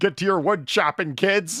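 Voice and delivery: shrill, booming, very loud high-pitched shouting. Acting out yelling at future kids to work the back forty: put-on shouting dad. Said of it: "I'm gonna shout at them like I own a giant piece of land".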